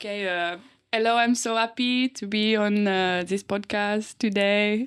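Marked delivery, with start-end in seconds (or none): 0.9-4.9 poor put-on French accent, higher pitch. On a podcast, trying out a greeting in a bad fake French accent. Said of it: "Should I pretend I'm French?".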